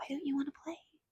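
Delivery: put-on high, small little girl voice. Describing a voice they heard, imitating a little girl's voice. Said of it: "but that was a little girl".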